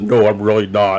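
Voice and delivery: voice pushed as low as possible. Retelling a reply to a drunk man at a buffet: voice dropped as low as possible. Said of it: "dropped my voice as low as I could".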